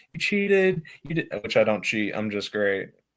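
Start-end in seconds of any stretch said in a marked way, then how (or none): 0.2-1.3 put-on yelled child's voice, high. Retelling how a kid at the guardrail yelled: imitating a kid yelling. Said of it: "he's just yelling at me".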